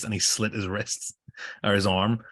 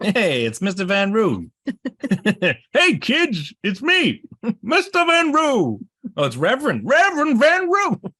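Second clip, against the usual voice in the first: very high, swooping, silly, goofy cartoon voice; 13 semitones higher, 7 dB louder than usual. Joking about a reverend's name from a story, goofy cartoon character voice. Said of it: "He sounds like a character out of Pluto".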